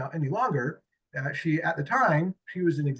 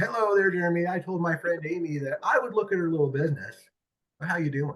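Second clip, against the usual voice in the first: condescending, patronising, talking-down tone. Retelling how a big prospect greeted him on the phone: imitating Barbara's tone. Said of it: "Her tone was".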